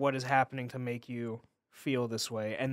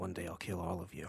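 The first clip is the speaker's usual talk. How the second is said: muttered under breath, much lower, quieter; 6 semitones lower, 8 dB quieter than usual. Retelling a mocked character's threat to everyone, muttered under his breath. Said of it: "under his breath".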